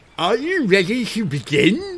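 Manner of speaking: loud high voice pushed through clenched teeth. Voicing the shark as it glares down at the players: speaking with a mouth full of teeth. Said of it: "He says with a mouth full of teeth".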